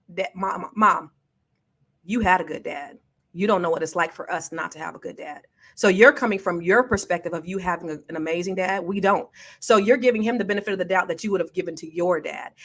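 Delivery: ordinary delivery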